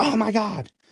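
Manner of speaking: high, freaked-out, shocked exclamation. Retelling how his mom reacted to a movie title: imitating someone freaking out. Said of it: "she freaked out".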